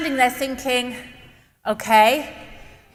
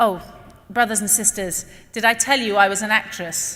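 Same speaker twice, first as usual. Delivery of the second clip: normal talking voice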